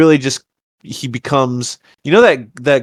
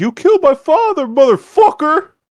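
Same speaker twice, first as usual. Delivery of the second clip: spoken in very high voice. Retelling a film scene where Roderick avenges his father: imitating Roderick's delivery. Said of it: "That's how he says it".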